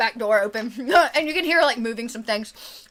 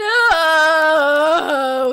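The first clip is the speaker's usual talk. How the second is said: loud wailing no, stretched long, drawn out; 4 semitones higher, 7 dB louder than usual. Voicing a weeping man at a tavern table: wailing. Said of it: "he wails".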